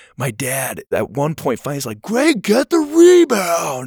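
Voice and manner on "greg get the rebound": very high, very slow swooping yell. Speaker retells their dad yelling at them during their game; imitating dad shouting. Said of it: "and shouted it out".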